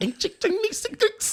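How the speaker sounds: very high-pitched, taunting, derisive caricature voice. Teasing the other speaker, the speaker does a mocking impression of how they sound. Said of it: "This is how you sound to me".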